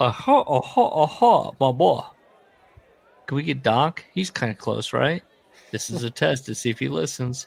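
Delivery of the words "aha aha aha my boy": put-on very slow, stretched-out Midwest accent. Joking about an impression of Nick Bockwinkel, doing him as a Hawaiian with Midwest accent. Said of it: "A Hawaiian doing a Midwest accent".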